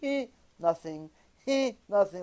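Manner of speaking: weak, soft, half-hearted put-on half sob. Showing the kind of crying that is only half a crying: imitating half-hearted fake crying. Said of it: "Like it's like half a crying".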